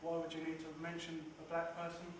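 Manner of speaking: normal talking voice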